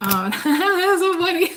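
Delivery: giggling while speaking. Cracking up at what came up while reading, laughing while talking. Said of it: "I'm laughing".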